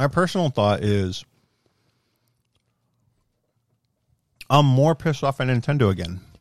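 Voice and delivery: talking with candy in mouth. Giving an opinion on an online membership, talking with candy in mouth. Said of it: "I put some candy in my mouth".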